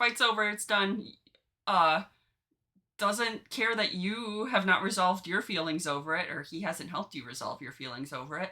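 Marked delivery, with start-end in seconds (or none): none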